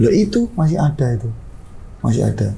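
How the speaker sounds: ordinary talk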